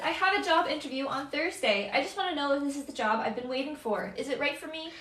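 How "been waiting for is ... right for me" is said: ordinary talk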